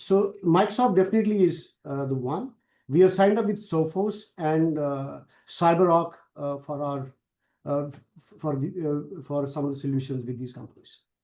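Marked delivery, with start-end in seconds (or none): 0.0-6.1 much louder, projected voice. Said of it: "Uh, could you speak a little louder?".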